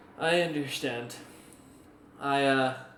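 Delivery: teary, holding back tears. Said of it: "a little tear kinda comes down".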